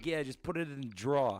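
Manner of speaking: put-on loud East Coast accent. Retelling how dad says a line: imitating an East Coast accent. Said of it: "my dad's from the East Coast".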